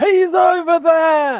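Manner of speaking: yelling loudly. Speaking from the stage into the microphone: shouting. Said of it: "I'll shout re- because I can't".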